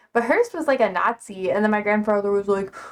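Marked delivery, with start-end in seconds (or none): none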